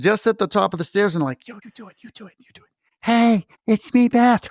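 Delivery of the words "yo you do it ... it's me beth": plotting, scheming tone. Acting out gingerbread men huddled at the top of the attic stairs: huddled gingerbread men plotting. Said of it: "the gingerbread men are, like, huddled together".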